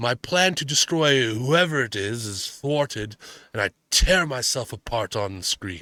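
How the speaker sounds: put-on drunk voice. Reading a quote aloud as a drunk Orson Welles impression. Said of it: "I'm gonna do my best Orson Welles impression. Drunk".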